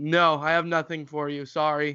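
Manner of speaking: curt, blunt delivery. Retelling how they turn down people asking for money: imitating own blunt refusal. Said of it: "I'm blunt about it".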